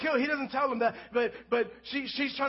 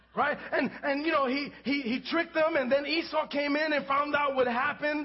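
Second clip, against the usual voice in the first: ordinary talk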